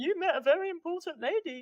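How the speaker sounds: high, silly, dopey dog voice. Retelling what the speaker said to the dog, in a stupid dog voice. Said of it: "said in my stupid dog voice".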